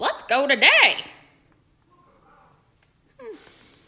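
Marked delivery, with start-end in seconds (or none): 0.0-1.0 squawking bird-like voice, very loud. Narrator reading Lovebird's line in a story, squawky Lovebird voice. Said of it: "in a squawky voice".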